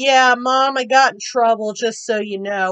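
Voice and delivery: ordinary talk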